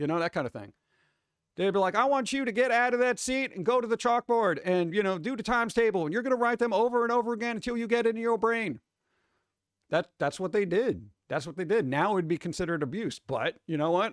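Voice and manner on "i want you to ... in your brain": stern drill-sergeant voice, strict and pitched up. Retelling how teachers in disciplinary schools scolded students: imitating a strict disciplinarian teacher. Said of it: "a lot of schools used to be run very disciplinary".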